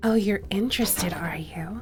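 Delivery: breathy, flippant vampire voice. Speaker demonstrates how they do their vampire voice: breathy, flippant vampire voice. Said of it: "it's a little breathy and a little flippant".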